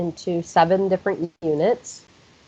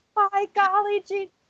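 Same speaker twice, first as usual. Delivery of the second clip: mock very loud, very high playground-style yell; 13 semitones higher, 4 dB quieter than usual. Recounting yelling a phrase at kids from the play structure, imitating a loud yell. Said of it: "really loud".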